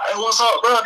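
put-on thick Dade County street accent, very high. Retelling how friends from down there talk: imitating a hard Dade County accent. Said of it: "They got that hard Dade County accent".

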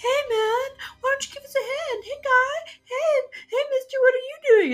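mock cheery calling out. Retelling a movie scene of hostages calling out from cells: imitating cheery hostages. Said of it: "kind of cheery and not, like, desperately trying".

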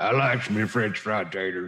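low, slow, mumbling Southern drawl. Quoting a movie line after a friend asks if it's Sling Blade, Sling Blade voice. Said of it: "Sling Blade".

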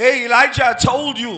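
very loud, stern scolding tone. Showing a congregation how a parent sounds scolding a child: stern parent voice. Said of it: "I can be stern as a, as a parent".

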